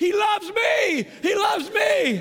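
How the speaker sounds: very high, slow, drawn-out screaming. Retelling own spontaneous reply in the street: retelling own scream. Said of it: "we are in the middle of the street just screaming".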